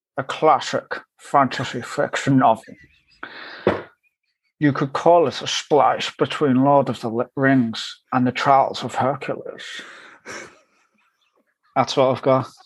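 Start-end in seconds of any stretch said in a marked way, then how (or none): 0.2-9.8 heavily laid-on put-on Scottish accent. Describing a novel on request, in a Sean Connery impression. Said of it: "describe your novel using your best Sean Connery impression".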